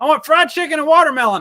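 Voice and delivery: play-acted enthusiastic, eager, very high and very loud. Retelling what a daughter asked for lunch: imitating her saying it enthusiastically. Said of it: "don't say it so enthusiastically like that".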